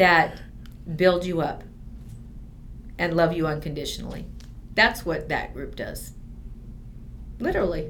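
getting teary. Describing a group of like-minded women, getting teary. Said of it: "I'm getting teary".

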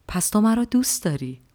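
kindly, affectionate tone. Caligula asks the Third Patrician a question, in a kind tone. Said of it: "با لحنی مهربان".

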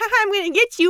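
put-on shrill, very high, loud little-kid taunting voice. Complaining to a co-host about a sound effect, mimicking little kids' voice. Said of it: "sounded like a bunch of little kids going like".

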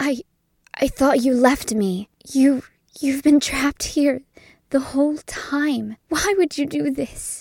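whispering and muttering. Voicing a mother staring at trapped ice, whispering and muttering. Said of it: "starts just whispering and muttering to herself".

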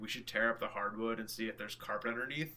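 plain

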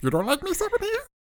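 goofy alien character voice. Asking Stephanie if she dislikes you: Jar Jar Binks voice. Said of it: "Jar Jar, get out of here".

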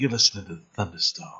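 low, soft, smooth late-night R and B DJ voice. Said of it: "it was a voice like that".

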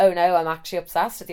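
ordinary talk, nothing marked

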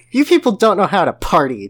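grumbling. Narrator reads a son grumbling at his mother as he marches upstairs, grumbling. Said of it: "Jeff grumbled".

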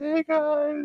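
very high, soft little half-whisper. Retelling a greeting heard from behind them: imitating a half-whisper. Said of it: "a little whisper from behind us".

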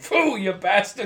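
put-on cranky old Italian man voice. Recounting a scene, imitating Patsy's angry spit: imitating Patsy's angry spit. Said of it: "angry old Italian man thing".

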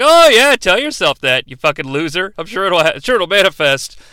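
a little bit sassy, talking-back tone. Retelling a film scene, voicing an administrative assistant: imitating a sassy assistant. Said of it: "a little bit sassy".

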